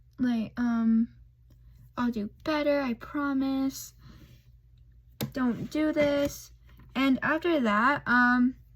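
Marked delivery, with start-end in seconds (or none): 2.0-6.5 put-on sobbing, tearful crying voice. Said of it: "Bawling his eyes out".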